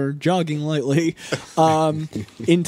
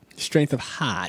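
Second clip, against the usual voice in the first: poor put-on Boston accent, whispered, breathy, hushed; 4 semitones lower, 6 dB quieter than usual. Mocking an actor's speech in the movie, in a bad Boston accent impression. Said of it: "his poor attempt at a Boston accent".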